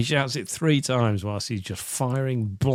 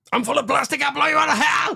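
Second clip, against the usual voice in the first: mock very high, shrill yell with words run together; 4 dB louder than usual. Retelling a character's threat with a grenade: imitating a shout.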